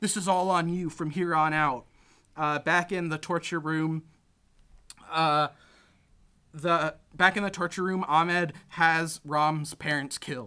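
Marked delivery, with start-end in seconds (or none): 0.0-1.9 mock angry delivery. Retelling a movie scene where a character prays: imitating an angry prayer. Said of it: "he goes and angrily".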